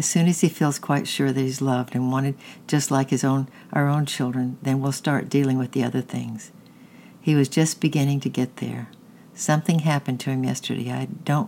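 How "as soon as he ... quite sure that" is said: ordinary delivery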